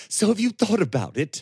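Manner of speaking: winded, panting, very high, fast breathless gasp. After a hard fighting lesson, the lad asks his teacher: gasped, out of breath. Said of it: "Gasped Simeon, out of breath from his exertions".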